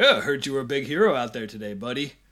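patronizing, talking-down delivery. Retelling a Power Rangers dinner scene, mock-condescending Tommy. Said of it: "Tommy kind of condescendingly is like".

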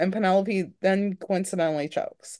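plain

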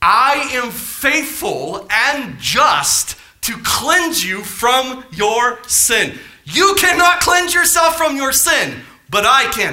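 slow, excited, fired-up preaching-style shout. Speaker addressing the group about God, yelling excitedly. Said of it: "I didn't mean to yell at you".

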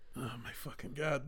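exasperated, fed-up, disbelieving outburst. Reacting to a story someone is telling: exasperated. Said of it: "every time I'm saying, like, "Oh my God," like, exasperated".

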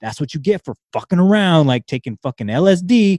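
fast, stern, angry scolding voice. Remembering breaking a toe, speaker quotes their mom: imitating mom's stern, pissed-off voice. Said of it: "in her very stern, pissed off voices".

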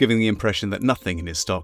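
plain reading voice

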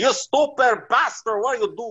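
put-on shrill scream in thick Italian accent. Retelling the other driver screaming at them after the car hit ice, Tony's thick Italian accent. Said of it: "he's got like a thick Italian accent".

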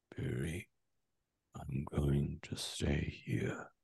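quiet hushed whisper. The game narrator gives Gorge's words as the door opens, whispering. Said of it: "and he just whispers".

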